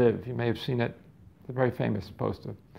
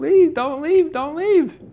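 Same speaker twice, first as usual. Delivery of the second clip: very high, loud sobbing, pleading voice; 6 dB louder than usual. Retelling a son clinging to his father's leg: imitating a crying plea. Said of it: "he's crying, throwing himself on the floor".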